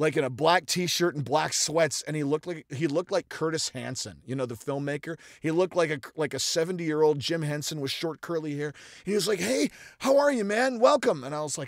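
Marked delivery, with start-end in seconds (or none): 9.4-11.2 very high, wild, madcap voice. Retelling meeting a Foley artist, imitating a Foley artist. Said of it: "the way you impersonate him".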